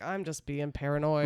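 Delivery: normal talking voice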